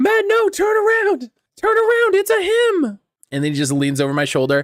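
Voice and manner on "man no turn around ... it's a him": put-on yelling. Retelling how viewers at home react, imitating horror movie viewers warning. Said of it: "everyone's at home like a horror movie".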